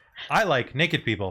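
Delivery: ordinary talk, nothing marked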